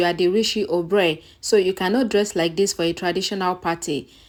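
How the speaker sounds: ordinary delivery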